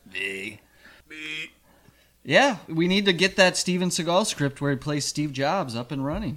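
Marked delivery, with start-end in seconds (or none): 0.1-1.5 clumsy, very soft, low, barely audible murmur. Retelling a studio story, answering who wrote the script: bad Steven Seagal impression. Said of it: "that was a bad impression".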